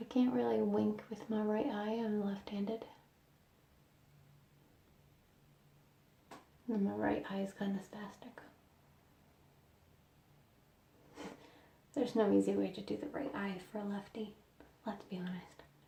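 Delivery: slight, soft, half-whispered voice. Talking while a sick family member rests nearby, in a slight whisper. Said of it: "I'm whispering slightly".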